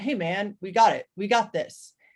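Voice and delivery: put-on gruff tough-guy voice. Describing a kind of confidence he doesn't mean, put-on gruff tough-guy voice. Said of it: "affecting a deliberately gruff vocal tone".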